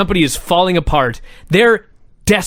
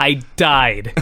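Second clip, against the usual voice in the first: normal talking voice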